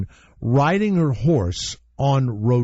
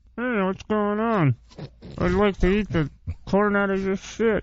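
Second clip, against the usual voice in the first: ventriloquist dummy voice, lips still, higher pitch; 8 semitones higher, 3 dB quieter than usual. Trying ventriloquism first after being told not to move lips: ventriloquist dummy voice, lips still. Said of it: "Do it without moving your lips".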